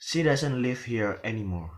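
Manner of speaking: voice drops away, pitch falling on anymore. Intonation lesson with a falling-tone example sentence, falling intonation on anymore. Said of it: "the word anymore is falling".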